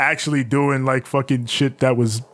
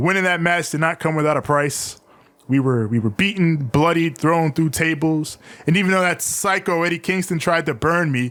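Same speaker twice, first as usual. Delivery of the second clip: usual speaking voice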